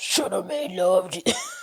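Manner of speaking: deepest put-on man voice.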